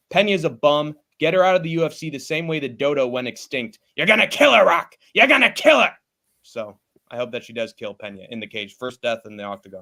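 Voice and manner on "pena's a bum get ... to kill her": angry, worked-up voice. Previewing a women's fight and tearing into one fighter, angry voice. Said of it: "Definitely felt the anger in your voice".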